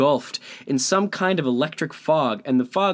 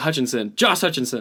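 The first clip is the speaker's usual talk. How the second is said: put-on fast, quickly blurted delivery. Retelling a quick word association to another speaker: imitating saying it fast. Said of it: "You said that so fast".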